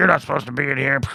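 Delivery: high, rough, rasping little alien squawk. Retelling a scene where aliens yell at a robot: Ugnaught yelling voice. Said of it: "the Ugnaughts that yell at C three P O".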